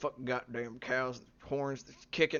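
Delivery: quiet mumbled bird-like swearing. Speaker describes a bird named Melvin's new cursing, doing Melvin's mumbled cursing. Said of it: "much more mumbled like".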